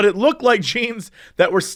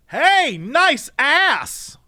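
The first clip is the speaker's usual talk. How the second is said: mock very high, shrill shout at full lung; 10 semitones higher than usual. Retelling a woman at a gas pump yelling at a passing couple: retelling a shout at full lungs. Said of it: "she shouts at the top of her lungs".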